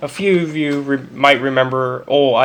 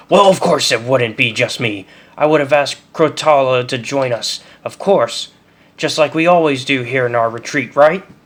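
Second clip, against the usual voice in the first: overly defensive tone, almost threatening. Narrating Harsel's reply to the survivors, overly defensive, almost threatening. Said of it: "his voice takes on an overly defensive tone, almost threatening".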